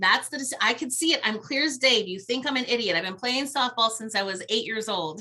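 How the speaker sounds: normal talking voice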